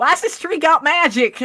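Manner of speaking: put-on high, loud, thick twangy Southern accent. Recapping the story, quoting Rose as she freaks out, in a twangy Southern accent. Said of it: "the most twangy southern accent known to man".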